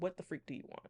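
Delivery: put-on annoyed, hostile, irritated, pissed-off tone. Retelling how the ancestors answered during a reading: imitating pissed-off spirits. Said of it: "vibe pissed off".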